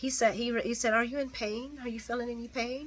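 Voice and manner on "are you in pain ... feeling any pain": put-on quiet, gentle, soft kindly kids' TV host voice. Retelling what Cyrus said to Mason, done in a Mister Rogers voice. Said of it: "In a Mister Rogers kind of voice".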